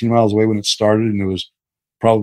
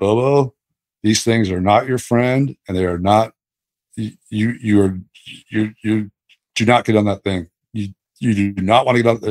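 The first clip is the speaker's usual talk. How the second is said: deeper, low inner voice. Retelling a close encounter, quoting an inner voice: retelling a deeper inner voice. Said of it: "this deeper voice in me just said".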